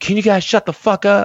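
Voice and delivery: play-acted, very high-pitched yelling. Retelling how a gym-goer yelled at them while lifting: imitating someone yelling. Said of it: "he literally just yells out".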